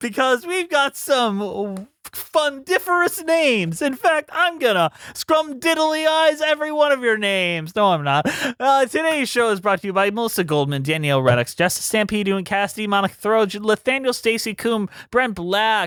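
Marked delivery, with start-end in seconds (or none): 0.0-7.7 high-pitched whimsical voice, somewhat drawn out. Opening the show's segment of reading out names, bad Willy Wonka accent. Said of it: "You can hear your name in a very bad accent".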